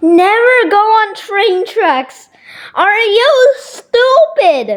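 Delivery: voice cracking. Telling someone off about going on train tracks, with your voice cracking. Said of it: "My voice kept cracking".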